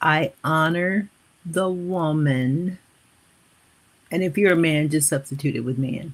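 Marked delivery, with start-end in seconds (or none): 0.0-2.8 slow, measured, dictation-like delivery. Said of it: "Let me repeat this slowly".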